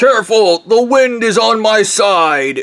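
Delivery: acted high, slow, drawn-out called-out voice. Retelling Bob's warning to the invaders: retelling a yell. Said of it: "And Bob yells".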